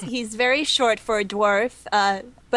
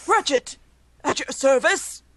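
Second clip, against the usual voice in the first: acted dwarf character voice; 4 semitones higher than usual. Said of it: "you trying to do a dwarf choice".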